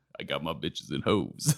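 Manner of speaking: very low, soft, deep, sexy man voice. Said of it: "deep sexy man voice retold".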